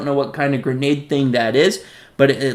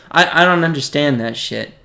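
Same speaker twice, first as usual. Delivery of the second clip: ordinary delivery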